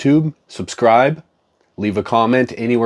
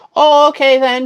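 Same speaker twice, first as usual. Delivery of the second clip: high put-on old lady voice, pitched way up. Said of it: "I'm gonna do my old lady voice".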